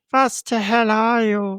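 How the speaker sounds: very slow, drawn-out creature voice. Doing how the movie creature repeats a line: Predator mimicking voice. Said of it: "So I'll do it the way you did it".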